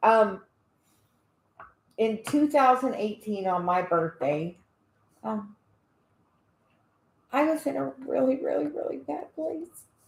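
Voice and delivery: near tears, on the verge of crying. Sharing a personal story with Cherry Lee, on the verge of tears. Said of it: "Because you're about to cry".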